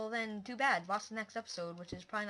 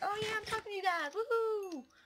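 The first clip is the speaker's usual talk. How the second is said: put-on enthusiasm, forced energy, pitched very high; 12 semitones higher than usual. Talking to a microphone, showing how they try to sound: forced energetic tone. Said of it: "I'm trying to be energetic".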